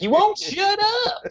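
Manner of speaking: crude put-on Southern drawl, very high and slow. Mocking how film actors sound: Bill Burr's racist Southern accent. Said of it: "Bill Burr's, like, racist accent".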